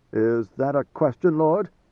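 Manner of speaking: ordinary delivery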